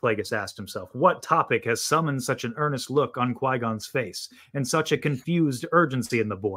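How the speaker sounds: ordinary delivery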